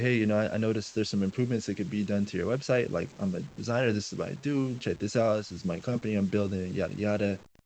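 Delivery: ordinary delivery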